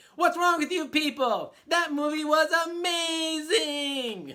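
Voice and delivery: very loud, high, slow rant, "amazing" drawn out. Retelling a comedian's pep rally bit to a crowd: Aziz Ansari voice. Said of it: "let me do the voice, I'll do the voice".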